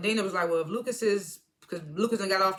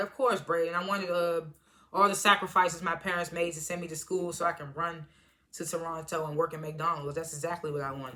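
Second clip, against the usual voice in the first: normal talking voice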